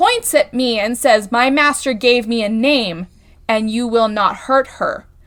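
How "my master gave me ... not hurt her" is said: eerie, very creepy, spooky creature voice. Retelling a dream where a humanoid figure speaks, in a very creepy voice. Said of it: "in a very creepy voice".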